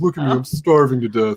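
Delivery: pitiful, pleading, begging puppy voice. Showing the voice she uses for her dog begging for food, begging dog voice. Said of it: "that's the voice that I usually use for my dog".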